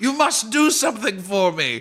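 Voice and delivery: shrill, frightened, very high goblin voice. Voicing a goblin as bees burst in: scared goblin voice. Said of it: "looks scared, and the goblin says".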